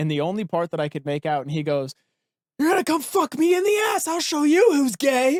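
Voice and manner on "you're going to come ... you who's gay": very high, shrill, loud male screaming. Telling about a man dragging a tote down the street, imitating him screaming.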